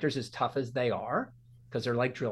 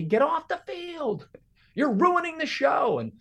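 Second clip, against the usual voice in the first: put-on very high, stretched-out shriek; 13 semitones higher, 4 dB louder than usual. Retelling how the band director chased him off: imitating someone screaming. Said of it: "he's screaming at me".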